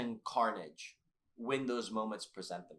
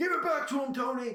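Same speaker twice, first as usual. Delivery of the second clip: shrill, very high, raspy scream; 7 dB louder than usual. Recounting a fight, imitating a man in the corner screaming raspily.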